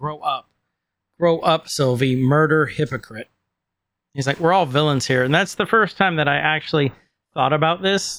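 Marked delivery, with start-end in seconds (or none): none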